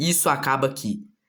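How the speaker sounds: ordinary talk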